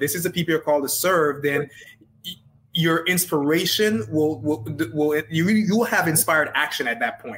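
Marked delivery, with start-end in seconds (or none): none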